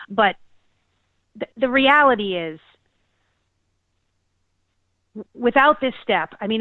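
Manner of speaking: getting choked up, close to tears. Talking to another speaker, getting choked up. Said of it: "I'm actually getting choked up".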